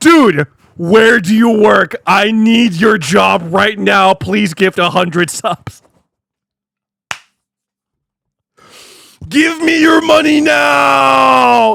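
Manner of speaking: overexcited, high, very loud, very slow, drawn out. Reacting to a viewer's message about big pay, overexcited. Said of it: "I got a little too excited".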